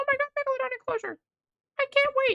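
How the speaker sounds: very high, over-eager, gushing, excited fan voice. Imagining how commenters will react to a teaser, doing an impression of excited commenters. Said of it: "I thought it was a funny impression".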